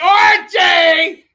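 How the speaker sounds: shrill, very loud, high-pitched belted shout. Channeling a sitcom character calling out a name: Edith Bunker voice. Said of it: "perform like that and be like".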